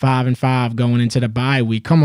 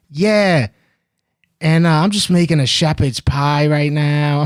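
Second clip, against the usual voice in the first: put-on acting stoned, high voice, slightly slower pace; 3 semitones higher than usual. Retelling a caller's first call, imitating someone high and a bit slower. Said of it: "He was so fucking high".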